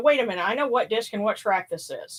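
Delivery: ordinary talk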